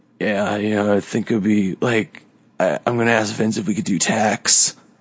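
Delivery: lazy drawl, every word stretched very slowly. Showing how another wrestler imitates Jon Moxley: talking really slowly. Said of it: "talking really slowly".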